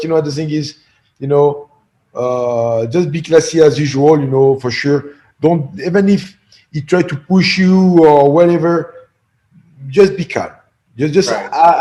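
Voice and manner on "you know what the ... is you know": ordinary delivery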